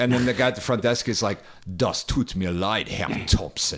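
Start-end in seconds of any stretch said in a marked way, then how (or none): 1.8-3.8 evil-sounding, sinister German delivery. Retelling a German textbook hotel dialogue as the front desk clerk: imitating evil-sounding German. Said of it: "It's like the most evil shit in the world".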